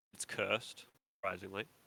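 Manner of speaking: ordinary talk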